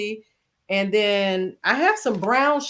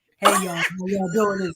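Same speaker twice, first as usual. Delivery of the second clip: put-on pulpit-style preacher voice; 3 semitones lower than usual. Teasing another speaker who always greets everyone that way, in a mocking preacher voice. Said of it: "put the preacher voice on?".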